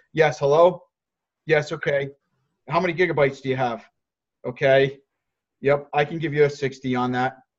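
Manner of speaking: unsmiling, unfriendly voice. Showing the wrong way to answer a customer call, unsmiling and unfriendly. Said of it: "But when you answer the phone like this".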